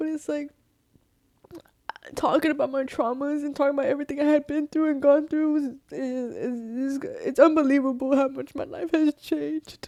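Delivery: crying while talking, tearful voice. A mother talks about her traumas and her son: crying while talking. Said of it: "And I know I'm crying right now".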